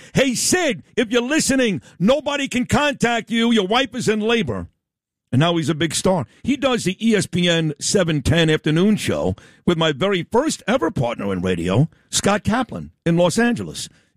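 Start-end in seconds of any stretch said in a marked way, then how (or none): 0.1-4.6 high-pitched screaming, hollered yelling. Retelling a radio broadcast calling out to him: imitating Sedano yelling. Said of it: "it's Sedano yelling and screaming".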